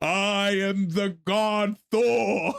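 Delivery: very slow, drawn-out proclamation. Retelling a cartoon scene, imitating Thor. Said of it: "Thor just, boom".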